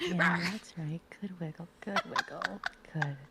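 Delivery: put-on praising mommy voice. Performing a bit cooing to a tapeworm, in a mommy voice. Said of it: "you plapping me with that Dami mommy voice".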